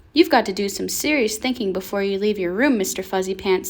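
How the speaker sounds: plain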